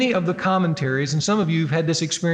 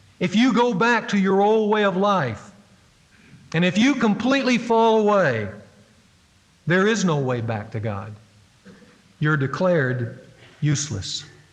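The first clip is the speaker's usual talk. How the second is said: dark, foreboding, chilling ominous voice; 2 semitones higher than usual. Speaker acting out how a Bible passage speaks its warning, mock-ominous voice. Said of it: "with an ominous voice, it said these words in very chilling tones".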